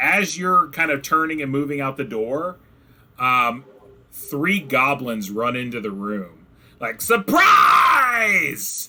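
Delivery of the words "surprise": very high, wild, swooping goblin yell. Voicing goblins bursting into a room: goblins yelling. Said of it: "they're, like, yelling".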